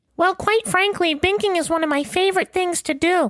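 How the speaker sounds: very high-pitched put-on mascot character voice. Answering whether the mascot loves binking: Can Can Binks mascot voice. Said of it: "This is Can Can Binks".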